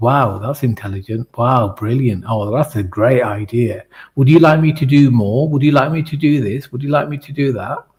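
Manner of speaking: gushing, eager-to-please, fawning robot voice. Imagining a child's robot best friend praising everything: imitating a flattering robot. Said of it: "the robot goes".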